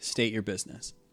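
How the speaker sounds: flat, unvarying delivery. Storyteller voicing a man pressed against the glass, in a very monotone voice. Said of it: "in a very monotone voice".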